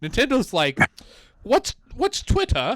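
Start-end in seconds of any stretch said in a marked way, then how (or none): 1.4-2.8 put-on high-pitched British-accented voice. Talking about game developers and pet-the-dog features, voicing Nintendo in a British accent. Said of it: "I gave the Japanese company the British accent".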